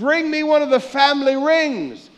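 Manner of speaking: shouting. Acting out the father welcoming his son home: yelling. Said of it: "And he yells".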